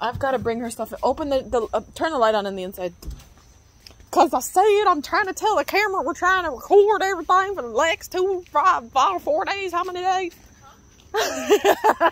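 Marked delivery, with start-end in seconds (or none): 4.9-9.7 rural country accent, much higher. Speaker tells the camera what they are recording, in a country accent. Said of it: "I don't know why I have a country accent".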